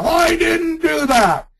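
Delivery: mock very high, shrill, drawn-out, indignant, protesting yell. Describing someone denying drug use too strongly, the speaker acts it out: mock indignant yell. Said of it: "(INDIGNANT YELL)".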